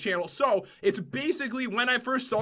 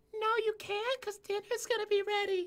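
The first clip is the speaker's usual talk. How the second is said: mom voice, pitched very high; 10 semitones higher, 6 dB quieter than usual. Redoing a mom character's line from their video on request; mom voice. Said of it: "I don't think I can do that voice anymore".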